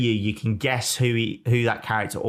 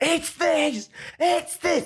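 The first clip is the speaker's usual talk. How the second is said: very high, slow, drawn-out scream. Imagining listeners screaming at their phones, imitating screaming listeners. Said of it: "Like screaming at the phones".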